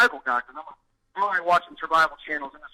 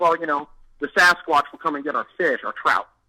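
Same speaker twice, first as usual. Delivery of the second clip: ordinary delivery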